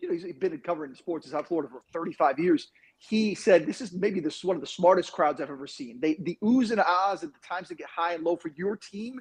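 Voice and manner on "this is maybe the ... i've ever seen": normal talking voice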